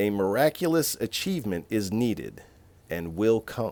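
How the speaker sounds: ordinary talk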